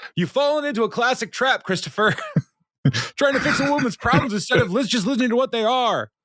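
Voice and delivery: shrill, very high yelling. Retelling a scene where Ron yells through his headphones: imitating Ron yelling. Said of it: "through his headphones, yells".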